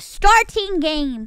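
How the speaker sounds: overexcited, loud yell straight into the microphone. Starting a game with enthusiasm, yelling into the mic. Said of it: "I just, like, yelled into the mic".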